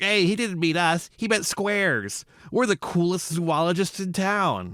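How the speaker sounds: put-on high-pitched, nasal, nerdy kid voice. Quoting a kid's line from a film, in a nasal nerdy kid voice. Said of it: "nasally ass, nerdy ass kid. This kid, he's like talking like this".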